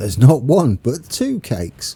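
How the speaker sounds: sing-song commercial voice-over announcer delivery. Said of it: "I'm saying it like it's an advert".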